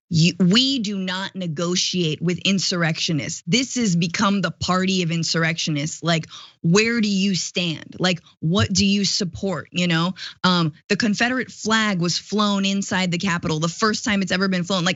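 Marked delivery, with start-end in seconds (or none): none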